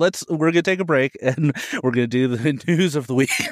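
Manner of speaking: speaking while laughing through the words. Show host announcing a break before the news of the week, laughing while talking. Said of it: "Sorry, I'm laughing now".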